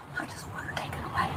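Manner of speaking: hushed whisper. Telling a police officer what you want done: whispering. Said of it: "She's whispering".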